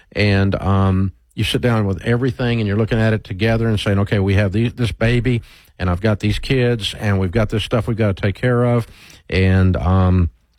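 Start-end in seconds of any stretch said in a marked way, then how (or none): none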